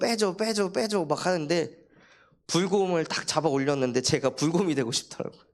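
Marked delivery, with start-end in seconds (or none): 0.0-1.0 mock tearful, crying child voice. Retelling a child's demand to take out a toy: imitating a child crying. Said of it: "막 울면서".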